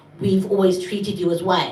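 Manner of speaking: ordinary talk, nothing marked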